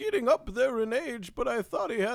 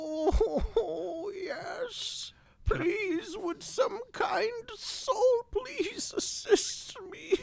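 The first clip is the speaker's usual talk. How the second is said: whimpering, whiny voice; 8 semitones higher than usual. Playing a stranded wagon owner answering a passerby's offer, in a whining voice. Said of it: "Whining doesn't get us anywhere".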